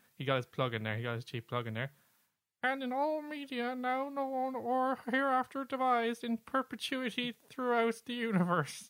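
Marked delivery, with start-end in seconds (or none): 2.6-8.9 put-on frog puppet voice. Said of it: "Your Kermit".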